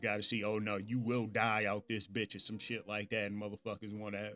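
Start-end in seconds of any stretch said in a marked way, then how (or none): 0.4-2.4 put-on serious tone. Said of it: "motherfucker got serious".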